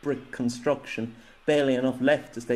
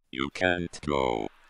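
very low, rough, gravelly inhuman grumbling; 10 semitones lower than usual. A creature speaks to a man struggling against it, gravelly inhuman grumble. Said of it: "grumbled a truly gravelled, inhuman voice".

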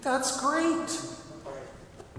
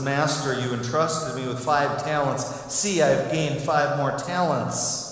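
plain

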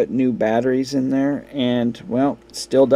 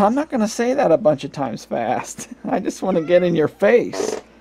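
high, cheeky pet cat voice; 5 semitones higher than usual. Speaking for the cat that walked into the video: voicing Snickers the cat. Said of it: "Snickers says".

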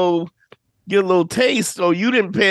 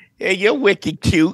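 put-on local Boston accent on the word wicked. Imitating a woman from Boston flirting: imitating a Boston accent. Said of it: "She was like".

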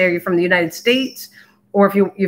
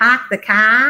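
put-on Boston accent held throughout; 3 semitones higher than usual. Talking about enjoying boston, trying the local accent: boston accent. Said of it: "I always go, ... Do you have that Boston accent?".

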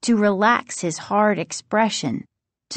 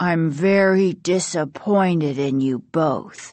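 low, flat, cool and level, no anger; 4 semitones lower than usual. A doctor addressing two people who did wrong, low, flat, cool voice. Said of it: "said in a low, flat voice, cool but not angry".

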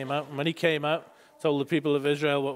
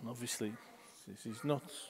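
ordinary talk

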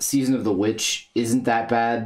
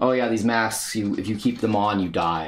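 usual speaking voice

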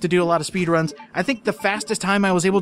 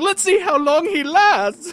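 very high-pitched, cackling villain voice; 10 semitones higher, 4 dB louder than usual. Retelling Alfred outside the Iron Maiden, imitating Alfred cackling. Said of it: "Alfred's just outside cackling".

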